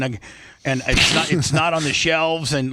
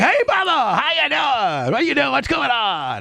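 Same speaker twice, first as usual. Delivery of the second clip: very high-pitched, fake-sick gagging, puking voice; 10 semitones higher than usual. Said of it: "tries to act like a, like he's puking".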